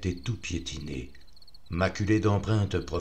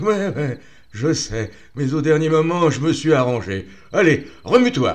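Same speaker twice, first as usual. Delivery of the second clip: very loud, big, booming voice; 9 semitones higher, 11 dB louder than usual. Reading a story, the friend Marc answers the narrator: Marc's big voice. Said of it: "Je regardais mon ami [name], sa grosse bouille sympathique, / sa grosse bouille sympathique, / Je regardais mon ami [name], / Une grosse voix me répondit".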